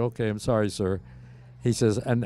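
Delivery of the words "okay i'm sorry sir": plain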